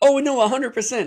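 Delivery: high, loud, thick sarcasm. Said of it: "I'm being sarcastic".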